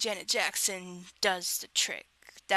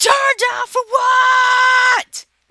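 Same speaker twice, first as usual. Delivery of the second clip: piercing, shrill, very high, very slow full-volume scream; 13 dB louder than usual. Retelling a guy who grabbed the phone and screamed into it, screaming. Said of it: "He screamed into the phone. He's like, ... Like that".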